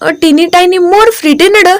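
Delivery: plain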